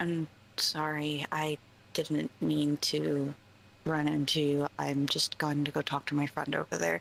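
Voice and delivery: courteous, polite, respectful, apologetic tone. A character apologizes after bumping into the ogre, very quiet. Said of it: "she's just gonna very quietly just be like".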